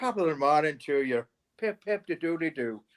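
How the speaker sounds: put-on Irish accent. Showing their own irish impression to listeners: irish accent. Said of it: "That's me Irish".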